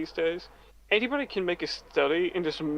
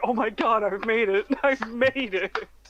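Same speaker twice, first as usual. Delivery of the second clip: acted overjoyed delight, high and drawn out; 6 semitones higher, 3 dB louder than usual. Retelling reacting to a first death threat: imitating own happy excitement. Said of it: "you sound so happy".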